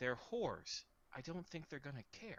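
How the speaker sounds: blunt, discreet, confiding aside. In a role-play scene, Xavier answers a question in a lowered voice. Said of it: "Xavier will lower his voice".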